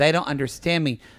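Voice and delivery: plain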